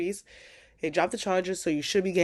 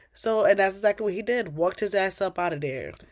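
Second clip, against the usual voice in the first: plain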